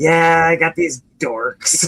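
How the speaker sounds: mock scornful tone. Mimicking how the other person always says it, mock-disdainful tone. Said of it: "you always say it with such disdain in your in your voice. Like".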